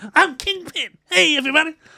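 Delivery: proper high-pitched, loud voice. Imagining the wrong actor as the Kingpin, in a high-pitched Kevin Hart voice. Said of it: "It's just like proper high-pitched voice".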